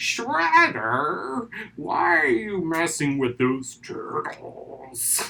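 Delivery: very slow, drawn-out, loud, swooping character voice. Remembering a cartoon character's line to Shredder, Krang voice. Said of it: "you hear Krang's voice, and he's like".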